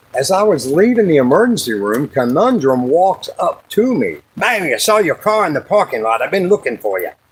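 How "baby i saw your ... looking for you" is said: put-on Scottish accent. Retelling leaving the emergency room, voicing Conundrum's greeting, imitating Conundrum's Scottish accent. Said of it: "Or whatever that Scottish accent shit is".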